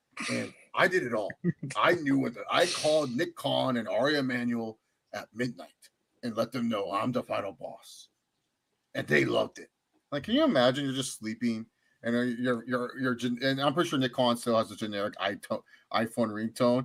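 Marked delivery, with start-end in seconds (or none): 0.3-9.7 boastful, bragging, full-of-himself big shot showman tone. Retelling a boastful claim, imitating The Rock boasting. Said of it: "The Rock being like".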